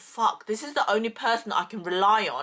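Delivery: ordinary talk, nothing marked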